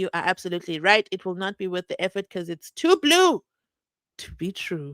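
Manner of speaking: ordinary talk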